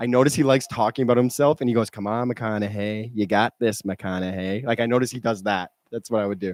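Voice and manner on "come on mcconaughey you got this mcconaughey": out-loud, pumped-up, self-cheering tone. Giving a tip for the impression, quoting his self-talk: Matthew McConaughey impression. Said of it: "my only tip I would say for the impression".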